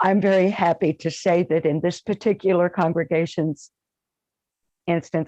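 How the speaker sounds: welling up, emotional voice, barely held in. Telling the channel host about her congregation, speaker is getting emotional. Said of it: "I'm getting emotional".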